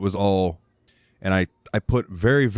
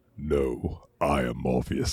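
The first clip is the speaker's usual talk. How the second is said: put-on commanding movie voice, lower and quieter; 7 semitones lower, 6 dB quieter than usual. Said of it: "I think I can do that voice".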